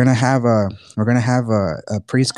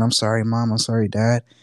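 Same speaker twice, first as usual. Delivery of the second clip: put-on crying, tearful and apologetic tone. Retelling a sister apologizing to her parents: imitating someone crying. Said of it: "she started crying".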